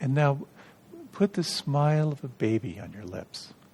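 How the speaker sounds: play-acted, very sweet, sugary tone. Telling a story, quoting a meditation teacher's instruction, imitating a very sweet voice. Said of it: "very sweet voice".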